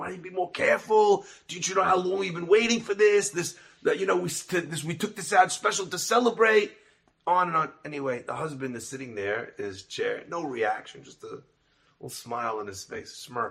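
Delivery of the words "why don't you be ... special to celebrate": high, scolding yell in acted mother voice. Retelling a story where a mother scolds her child: imitating a mother yelling. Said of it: "she's yelling at the kid and she's screaming".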